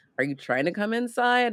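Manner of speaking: mock grudging, reluctant tone. Retelling how a character asks the neighbor in: imitating a reluctant, unwelcoming invitation. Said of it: "under duress, clearly not like a welcome in".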